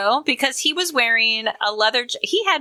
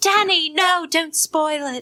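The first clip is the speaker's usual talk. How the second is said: put-on British accent, high-pitched and slow; 6 semitones higher than usual. Retelling a movie kiss scene, quoting her reply: Sandy in a British accent. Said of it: "you're gonna get British from me".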